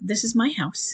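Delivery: very calm, steady, kind, empathetic firmness. Advising a listener how to stand their ground, showing the line: calm and empathetic. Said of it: "you say it very, very calmly and with empathy".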